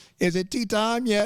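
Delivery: British-accented alien voice, put-on. Introducing oneself on a podcast as a joke: british alien voice. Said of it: "Is this a British alien?".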